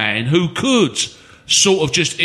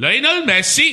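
put-on Welsh accent, pitched up; 8 semitones higher than usual. In a football discussion, a speaker proposes getting lionel messi, in a put-on welsh voice. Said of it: "I did a Welsh voice".

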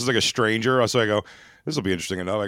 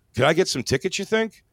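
awkward, pitched-up, small delivery; 8 semitones higher than usual. Retelling how a man asked him for show tickets mid-trip: retelling an awkward ask.

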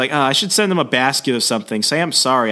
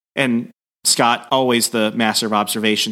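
ordinary delivery

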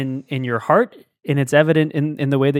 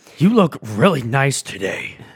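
dour, grim, gloomy delivery. Showing a nice thing said in a bad way, in a dour Batman voice. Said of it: "the Batman".

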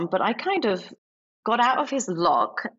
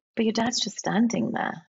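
put-on calm, steady voice. Retelling Scott's reply about the speaker's dad, imitating Scott's calm voice. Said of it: "And he was really calm".

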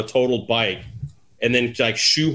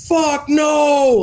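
put-on sudden, shrill, high-pitched, loud scream; 5 dB louder than usual. Recounting yelling at the TV while his wife was across the house, retelling screaming at the TV. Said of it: "like scream at the TV".

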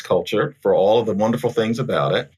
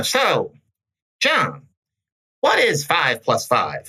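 mock nasal high-pitched voice, higher; 6 semitones higher than usual. Retelling an outside tester's question to a student: imitating a high nasal voice. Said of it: "she had this high nasal voice".

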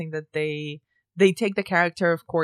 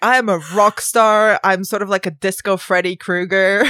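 mock greaser tough-guy voice, louder; 2 semitones higher, 8 dB louder than usual. Mocking a horror character who is like Danny Zuko with a drill: imitating a greaser killer character. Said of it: "And he's like".

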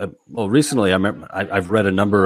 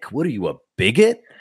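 mock taunting guy voice, higher; 3 semitones higher than usual. Acting out a man shaming lesbians: imitating a taunting dude. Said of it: "That is such a dude move".

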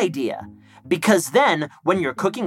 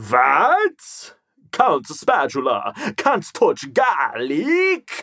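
put-on spooky vampire voice. Pretending to be a spooky vampire who cannot touch garlic: Count Spatula spooky vampire voice. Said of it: "I was just pretending to be a spooky vampire".

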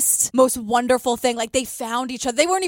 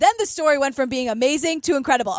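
ordinary delivery

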